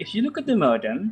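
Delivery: voice climbs upward at the end on modem. Intonation lesson after a falling tone, phrase ends with rising pitch on modem. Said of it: "it's uh, going up".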